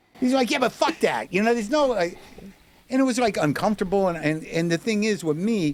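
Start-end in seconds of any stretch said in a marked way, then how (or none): 0.5-1.3 play-acted, yelled shouting. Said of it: "he's yelling at me".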